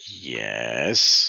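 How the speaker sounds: heavy, obvious sarcasm, low and loud. Speaker acts out his reply to her question, retelling a sarcastic yes. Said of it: "very sarcastically".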